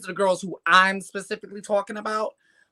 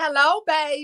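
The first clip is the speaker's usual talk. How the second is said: put-on Southern US accent, pitched up; 8 semitones higher than usual. Speaker imitating how strippers greet someone, in a put-on southern accent. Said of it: "They do southern accents".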